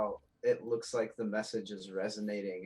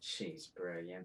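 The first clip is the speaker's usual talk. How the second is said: very quiet, low mutter under the breath; 4 semitones lower, 11 dB quieter than usual. Peeking over a shoulder at another character: muttering under breath. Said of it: "mutter under my breath".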